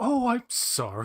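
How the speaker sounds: very high-pitched, truly sorry-sounding apologetic voice. Retelling an actor's reply to the director: imitating William Morgan Shepherd apologizing. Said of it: "really apologetic".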